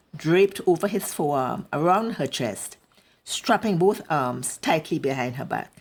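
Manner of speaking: plain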